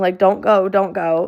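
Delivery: acted sobbing and screaming. Retelling a fight with a partner who threatened to leave; retelling scream-sobbing pleas. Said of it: "I'm just sitting there like scream sobbing".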